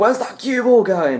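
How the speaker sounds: put-on very high, loud, piping old man's voice. Imagining suddenly hearing him as a cue ball heads for the corner pocket, in John Virgo's old man's voice. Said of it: "we hear an old man's voice saying".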